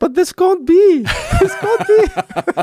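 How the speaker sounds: very high, loud, squeaky shocked disbelief. Retelling a court ruling, the speaker mimics the judge's shocked, very high-pitched voice. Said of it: "went into this very high-pitched voice".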